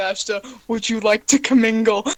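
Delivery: very loud, booming, menacing voice. A voice speaks into a sleeping character's head, in a threatening voice. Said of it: "a threatening voice in your head".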